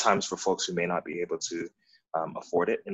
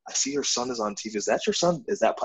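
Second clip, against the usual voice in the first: put-on, super excited, high, swooping gush; 9 semitones higher than usual. Retelling what an excited person said on seeing a son on tv: imitating someone super excited. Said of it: "she was so super excited".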